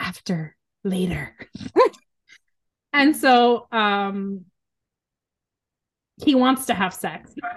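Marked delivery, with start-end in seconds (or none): 0.0-1.4 weird stress on later, leaned on, soft whisper. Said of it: "a really weird stress on the word".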